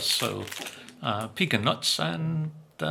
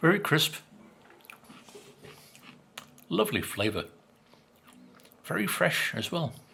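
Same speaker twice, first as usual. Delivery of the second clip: speaking with mouth full of food; 2 semitones higher than usual. Tasting biscuits and describing them aloud, talking with mouth full. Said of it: "Sorry to speak with my mouth full".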